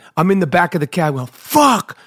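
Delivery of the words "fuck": play-acted, high, screamed swearing full of despair. Retelling cursing in the back of a cab: imitating own screaming.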